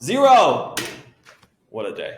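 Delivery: shouted right out, drawn-out and swooping. Solving a math problem aloud, announcing the answer while yelling. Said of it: "Sorry for yelling".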